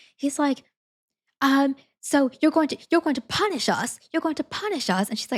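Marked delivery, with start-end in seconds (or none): 1.4-5.1 flustered, panicky, freaked-out delivery. Retelling how a british man in line reacted, imitating a man freaking out. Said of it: "this British man is just freaking out".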